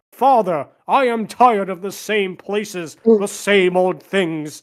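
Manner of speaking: grand, big, dramatic overdubbed movie-hero voice. Describing an old Italian Hercules movie, imitating the dubbed movie voice. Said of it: "you have the voice sounding like".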